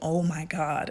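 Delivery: put-on low, hushed, on the verge of weeping. Retelling their mom's reaction to being handed money, imitating mom almost weeping. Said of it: "She like almost wept".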